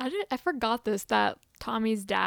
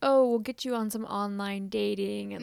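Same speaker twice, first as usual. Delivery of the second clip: ordinary talk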